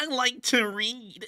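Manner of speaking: bad, very high, very slow woman's voice. Showing the best female voice impression managed: bad female voice impression. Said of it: "the best I can do is go".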